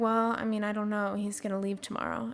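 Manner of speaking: mock depressed, gloomy tone. Retelling answering her mom about where David is, retelling sounding depressed. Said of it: "I'm like just very depressed sounding".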